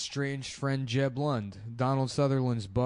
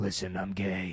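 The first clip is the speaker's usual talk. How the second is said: breathy put-on TV hero voice, lower; 4 semitones lower than usual. Joking about the show twenty-four: breathy Jack Bauer impression. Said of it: "He's got a real breathy voice".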